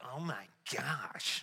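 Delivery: slow, mock shocked whisper with dismay. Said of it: "we're just like".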